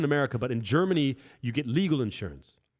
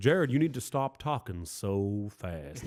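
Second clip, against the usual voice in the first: very slow, drawn-out Southern drawl; 5 semitones lower, 4 dB quieter than usual. Retelling what he kept telling the speaker, in a southern accent. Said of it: "like a real Southern guy".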